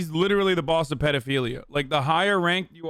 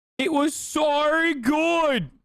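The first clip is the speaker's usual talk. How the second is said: very high, slow put-on Australian accent; 11 semitones higher than usual. Mocking another speaker's accent: mock Australian accent. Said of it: "I can't take him seriously with the fucking accent".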